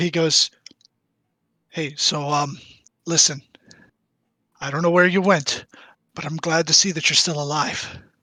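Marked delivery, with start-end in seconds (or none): 1.7-7.9 hushed, close whisper as if in the ear. He hugs you back extra tight and speaks into your ear, whispering. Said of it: "he kind of whispers in your ear".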